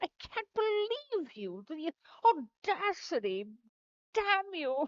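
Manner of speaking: fake, drawn-out, sing-song British accent. Joking with another speaker about talking in an accent: put-on british accent. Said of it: "isn't it addicting to just talk in that accent?".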